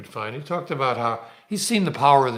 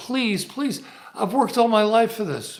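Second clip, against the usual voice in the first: high, tearful, begging voice; 9 semitones higher than usual. Retelling how a crying young woman begged him to play: imitating a girl begging. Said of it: "This girl begged him".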